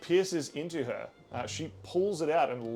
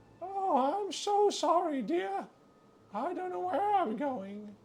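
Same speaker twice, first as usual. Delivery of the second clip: put-on old woman voice, much higher. Narrator voicing a hooded shopkeeper speaking to a customer, in an old woman voice. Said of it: "keeping the old woman voice on".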